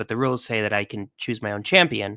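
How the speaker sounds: normal talking voice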